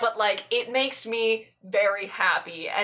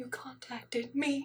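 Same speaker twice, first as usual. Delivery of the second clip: very hushed, quiet, high, bewildered, confused murmur; 5 semitones higher, 10 dB quieter than usual. Retelling how he answered the message, retelling a very quiet, confused reply. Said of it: "he just goes like very quietly with this look of like concern and just like confusion".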